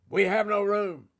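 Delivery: big, loud, booming voice. Telling the nativity story, the little innkeeper turns Joseph and Mary away: big booming voice. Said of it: "said in the big booming voice".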